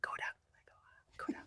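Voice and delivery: faint, very soft whispered voices. Speaker acts out the voices in their head, whispered voices in head. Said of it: "Whispered like little like voices in my head".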